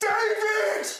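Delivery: excited scream. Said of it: "And you're screaming".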